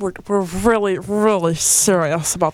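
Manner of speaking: put-on country singer voice. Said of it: "Sounds like [name]".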